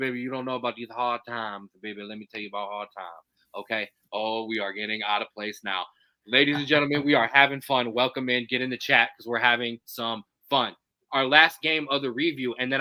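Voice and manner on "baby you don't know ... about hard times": low, soft-spoken wrestling promo voice. Host on a live stream breaks into his Dusty impression. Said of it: "I'm going to get my Dusty impression".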